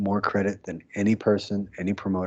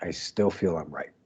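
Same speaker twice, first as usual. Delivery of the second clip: ordinary delivery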